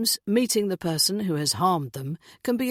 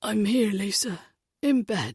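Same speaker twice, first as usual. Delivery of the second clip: muffled, sleepy, just-woken-up voice; 2 semitones higher than usual. Answering a neighbour who calls up the stairs: muffled, just-woken-up voice. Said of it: "His voice is muffled as if he's just woken up".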